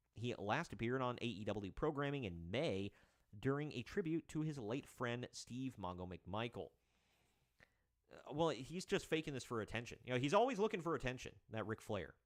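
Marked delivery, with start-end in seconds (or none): none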